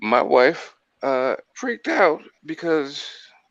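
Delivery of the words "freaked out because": loud, cracking voice break. Telling a story about the speaker's wife freaking out, voice cracking. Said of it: "my voice just cracked".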